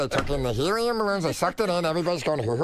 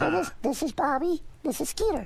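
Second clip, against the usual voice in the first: put-on very high, squeaky little cartoon kid voice; 10 semitones higher, 3 dB quieter than usual. Voice actor demonstrates the voice used for a cartoon role, Skeeter voice. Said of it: "Skeeter talk like this".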